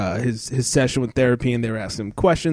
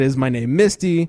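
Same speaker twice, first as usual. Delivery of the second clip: usual speaking voice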